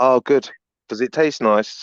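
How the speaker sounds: mock snide, sarcastic remark. Retelling what she said on finding everyone eating pizza: imitating a sarcastic tone.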